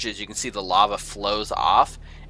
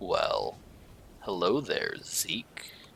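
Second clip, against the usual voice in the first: deep, breathy, slow rumbling voice; 2 semitones lower, 8 dB quieter than usual. Narrating a game scene, a character greets Zeke in a glade, deep rumbling voice. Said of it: "this deep kind of rumbling voice just says".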